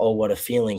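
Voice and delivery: ordinary talk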